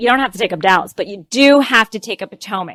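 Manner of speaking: ordinary talk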